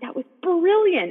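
high, loud amazed gushing. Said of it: "you're like".

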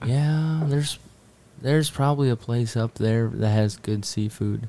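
slow, drawling hillbilly way of talking. Retelling how a man answered them, in a slow hillbilly drawl. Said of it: "He talked really slow like a hillbilly".

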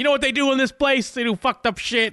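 very high-pitched, lunatic ranting yell. Retelling a scene, a man rants at interns outside a building: imitating a ranting yell. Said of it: "He's yelling at just random like interns".

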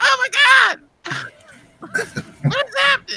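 shrill, whiny screaming, pitched very high. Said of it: "He's screaming like this".

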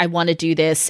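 ordinary delivery

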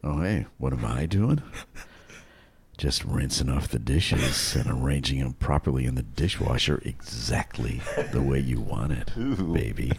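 very low, soft, intimate seductive narration voice. Speaker demos lines to be marketed to women their age: erotica voice for women. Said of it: "That's erotica for women".

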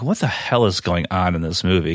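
usual speaking voice

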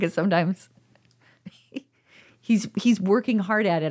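words carried on a laugh. Explaining about a partner who is trying hard, laughing while talking. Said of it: "I'm laughing".

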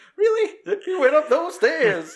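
very high-pitched, loud, worried guard voice.

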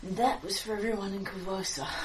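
quietly satisfied gnome voice. Game master voicing an invisible gnome over a dying foe, quietly satisfied gnome voice. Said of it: "you hear a quietly satisfied, invisible gnome voice".

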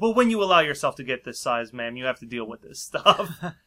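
ordinary talk

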